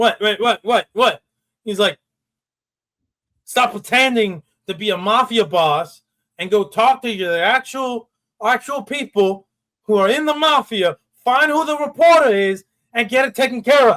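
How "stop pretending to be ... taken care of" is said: rough, only half-managed attempt at Boston accent. Retelling a coach's order about Tommy, as Mike Vrabel in Boston accent. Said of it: "That's me trying to do like a Boston accent".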